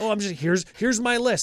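scornful parody of excitement. Mocking players who were excited about the card: imitating excited players. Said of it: "was excited about this is like".

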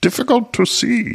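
high, swooping character voice. Quoting Yoda's line to listeners, in a Yoda voice. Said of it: "I wish I could do a Yoda voice".

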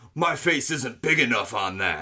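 exaggerated gym-bro macho put-on voice. Asked for a sample, imitating a man's bro voice. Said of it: "Can you give us a sample?".

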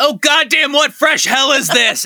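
very high, shouted outcry. Retelling a cartoon scene, imitating Lex shouting. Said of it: "Lex shouts out".

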